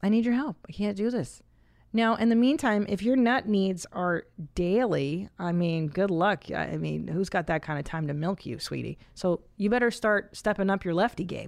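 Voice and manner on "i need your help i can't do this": mock tender, loving tone. Advising a listener how to ask his wife for help, in a mock loving tone. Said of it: "in a loving tone of".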